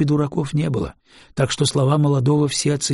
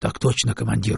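ordinary delivery

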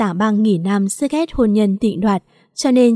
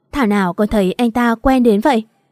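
ordinary delivery

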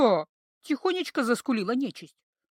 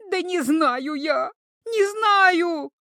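very slow, drawn-out squealing shriek; 4 semitones higher, 3 dB louder than usual. Narrator reads the frightened creature answering the girl's threat, shrieking. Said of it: "Опять сорвалась на визг та".

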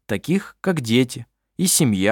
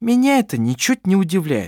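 biting, caustic, acid-tongued tone, pitched higher; 7 semitones higher than usual. A woman answers a man's complaint about unpleasant news, caustic. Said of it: "язвительно сказала Клара".

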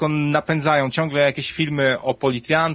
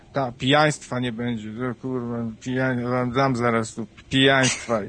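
put-on muttering under breath, lower pitch; 3 semitones lower than usual. Retelling a man with a beer heading to work, imitating muttering under breath. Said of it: "mruczał sobie tak pod nosem".

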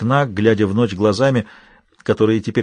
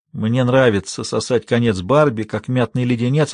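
ordinary delivery

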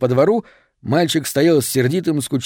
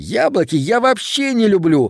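contemptuous, sniffy, scornful, pitched up; 6 semitones higher than usual. A boy turns away from a girl offering him apples; contemptuous. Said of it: "презрительно сказал он".

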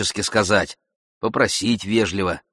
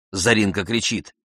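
ordinary delivery

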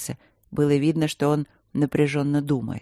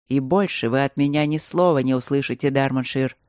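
usual speaking voice

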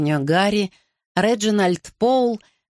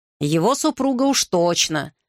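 plain reading voice

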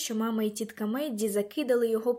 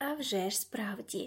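hushed, soft whisper; 7 dB quieter than usual. Leslie whispers this to the narrator; whispered. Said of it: "прошепотіла мені Леслі".

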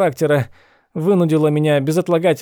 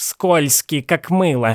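grumbled, grumpy muttering. A mother answers her daughter's defense of him, grumbling. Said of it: "проворчала".

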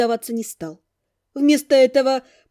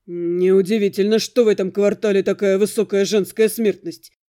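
muttered through gritted teeth, lower pitch; 5 semitones lower than usual. Damian, having just cursed, speaks to the narrator through gritted teeth. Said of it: "процедил он".

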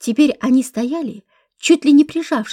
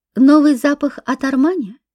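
ordinary delivery

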